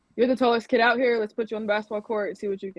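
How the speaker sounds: usual speaking voice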